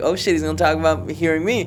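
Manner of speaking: plain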